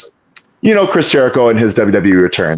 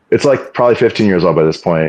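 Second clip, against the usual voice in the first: normal talking voice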